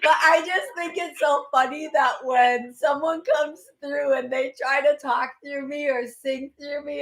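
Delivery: talking through laughter. Explaining a message to a listener while laughing while talking. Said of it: "I have to stop laughing".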